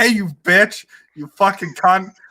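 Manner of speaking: put-on drunken cursing, pitched high but held in. Recalling a drunk friend screaming at something in the room, retelling a scream. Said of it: "he starts screaming like".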